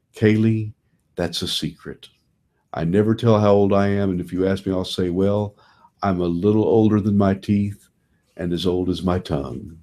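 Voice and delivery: ordinary delivery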